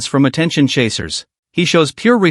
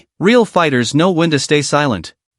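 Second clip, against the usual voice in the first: ordinary delivery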